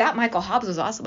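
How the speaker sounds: ordinary talk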